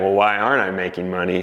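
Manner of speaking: plain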